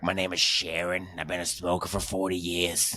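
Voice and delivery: put-on voice of a decades-long heavy smoker. Mocking a man's voice, the speaker imitates him: imitating a longtime smoker's voice. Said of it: "He sounds like".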